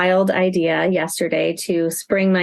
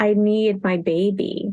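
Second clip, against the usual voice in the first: put-on sad child voice, near tears, pleading. Retelling her son's plea at the car, imitating a sad child about to cry. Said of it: "he looks so sad and, like, just about to start crying".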